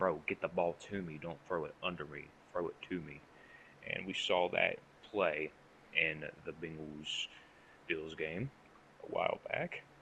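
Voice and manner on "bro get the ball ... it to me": normal talking voice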